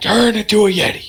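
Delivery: shrill, very high-pitched yelling. Imagining a Yeti grandfather in a movie, imitating Nicolas Cage yelling. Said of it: "yelling the whole time".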